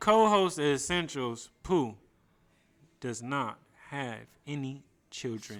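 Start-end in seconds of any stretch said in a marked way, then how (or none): 1.6-5.6 mellow, smooth, laid-back R&B radio-style delivery. Repeating a line slowly on request in a put-on mellow r&b style voice. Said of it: "You gotta say it, like, mellow, like R and B style".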